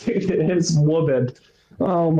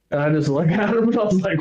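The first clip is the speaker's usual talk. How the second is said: ordinary talk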